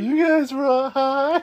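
full-on put-on stoner voice, high and loud. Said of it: "in the most stoner way possible".

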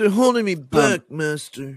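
loud, whining mock voice. Adding a whiny line after another speaker calls Anakin whiny: Taran Killam impression of Hayden Christensen. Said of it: "my impression of Taran Killam doing his impression of Hayden Christensen".

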